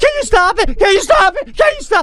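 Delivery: put-on very high pleading yell, repeated. Retelling a girl being whipped around and yelling at him to stop, retelling someone yelling. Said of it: "she's yelling".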